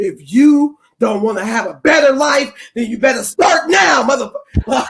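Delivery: hostile, aggressive, angry, forceful delivery. Acting out how a phrase comes across aggressively; mock-aggressive delivery. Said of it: "that's how aggressive it come off".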